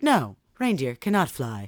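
put-on smart-assistant voice. Retelling a boy asking Alexa whether reindeer fly, in an obnoxious know-it-all Alexa voice. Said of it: "does it in her fucking obnoxious, know-it-all Alexa voice".

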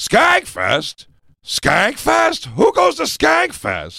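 swooping put-on voice, every word stretched and swinging. Showing the others an impression as a guest host: Jeff Garlin impression. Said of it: "That's my Jeff Garlin".

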